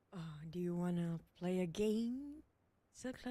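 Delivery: slow, deliberate horror-movie tone, "game" drawn out. Asked by the co-caster to say it in the Saw movie tone. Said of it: "say it in the Saw movie tone".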